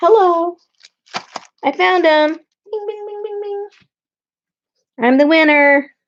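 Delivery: high, excited little cheer. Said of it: "I'm sorry if I'm talking too loud".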